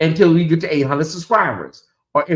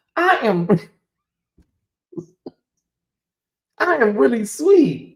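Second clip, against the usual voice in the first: high, swooping words while fighting back laughter; 7 semitones higher than usual. Telling viewers people think they're mean, laughing while talking. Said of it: "I'm trying not to laugh so hard".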